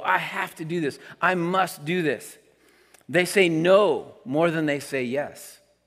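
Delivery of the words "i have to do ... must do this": firm, heartfelt, definite put-on delivery. A pastor retelling what people tell him, mimicking a heartfelt declaration. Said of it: "there's these like heartfelt statements that go".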